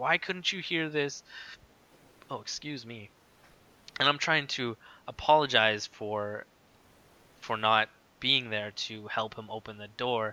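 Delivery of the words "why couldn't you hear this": enraged, furious, high-pitched screaming yell. Retelling a furious grandfather's words at the door: imitating someone screaming. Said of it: "screaming at me".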